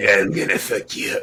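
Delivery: raspy, rough longtime smoker voice. Imitating a woman being discussed: raspy longtime smoker voice. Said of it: "that perfect raspy voice of".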